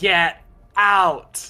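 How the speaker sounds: shouting loudly. The furious dwarf repeats his order to get out: yelling louder. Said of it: "just hear him yell louder saying".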